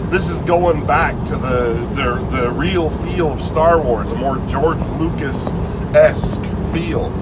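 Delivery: ordinary talk, nothing marked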